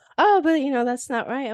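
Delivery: high, loud, mock indignant voice.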